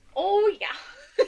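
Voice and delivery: Minnesota accent, long O's. Joining the joke about a minnesota accent: put-on minnesota accent.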